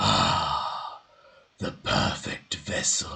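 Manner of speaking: rumbling, otherworldly, deep low voice. Game master voicing a being that speaks to the players, in a deep rumbling voice. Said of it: "a deep, rumbling voice say".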